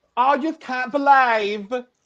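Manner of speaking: put-on shrill, very high and loud Essex accent. Quoting Bowie Jane after she is blindsided by the vote, Essex-sounding impression. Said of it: "that's that's very Essex".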